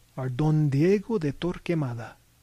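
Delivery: plain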